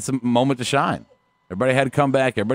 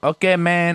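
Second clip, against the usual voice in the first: bad, pitched-up put-on Mexican accent; 5 semitones higher than usual. Trying out an accent after being told it's hard: attempted mexican accent. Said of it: "it's hard to do one Mexican".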